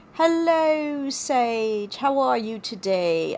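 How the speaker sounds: terrible put-on British accent, "sage" drawn out. Saying hello to Sage, in a terrible British accent. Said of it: "my British accent is terrible".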